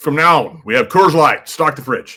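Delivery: put-on baritone voice. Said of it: "that baritone voice".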